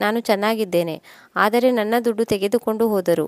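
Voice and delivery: ordinary talk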